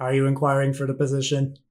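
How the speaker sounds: flat, machine-like, automated robotic monotone. The game master voices a robotic voice answering from the squid bag: robotic voice. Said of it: "a robotic voice come from the squid bag".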